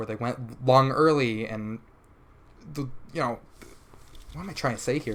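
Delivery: halting, stumbling, tripping over own words. Analyzing a match's rounds, stumbling over words. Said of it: "I'm stuttering over my own words".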